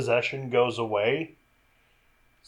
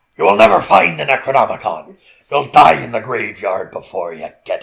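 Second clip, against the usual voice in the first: loud, booming, funny possessed demon voice. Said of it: "He's just doing a funny voice".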